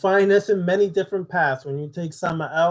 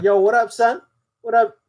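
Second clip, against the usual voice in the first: laid-back casual tone, raised and high-pitched; 5 semitones higher, 5 dB louder than usual. Retelling how a college roommate greeted friends on the phone: imitating a roommate's normal greeting. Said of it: "you'd be like".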